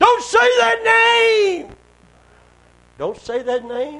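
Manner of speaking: put-on very high, shrill, gravelly old-sounding cry, drawn out. Speaker retells the voice that cried out as he commanded it out, old gravelly voice crying out. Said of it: "that old gravelly voice, cried out".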